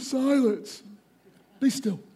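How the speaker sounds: sleepy, groggy voice, half-yawned. Retelling Jesus waking up to calm the storm, speaking through a fake yawn. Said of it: "through a yawn, he went".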